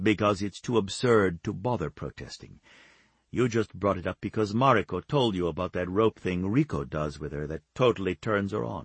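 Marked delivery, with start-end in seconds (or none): none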